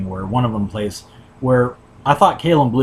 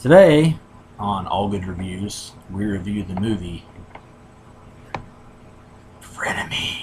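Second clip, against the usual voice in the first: slow, unsettling, creepy put-on delivery. Opening a movie review show intro in a creepy put-on voice. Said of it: "I had to say it in that creepy ass voice".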